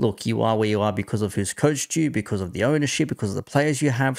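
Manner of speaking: normal talking voice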